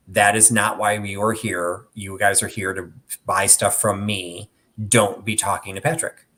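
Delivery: ordinary talk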